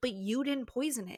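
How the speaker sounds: ordinary talk, nothing marked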